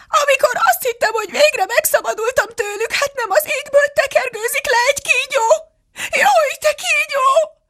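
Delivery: very high screech growing shriller with each phrase. The pigeon, continuing its complaint to Alice: increasingly shrieking. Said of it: "folytatta a galamb egyre jobban rikácsolva".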